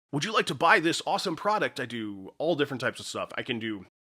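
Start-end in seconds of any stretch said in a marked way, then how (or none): 0.1-1.7 hyped, high, super energetic over-the-top commercial voice. Showing a super energetic, over-the-top commercial read. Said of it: "super energetic, off, over-the-top, awesome YouTube commercials".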